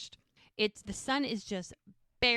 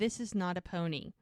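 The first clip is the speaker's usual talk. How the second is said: mock nervous speech. Retelling a scene where Mel objects to a horse gift: imitating a nervous line.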